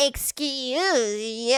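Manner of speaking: mock rude tone with the word "excuse" stretched long. Retelling what the other speaker said to an older woman: imitating a rude "excuse you". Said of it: "I didn't say it like that".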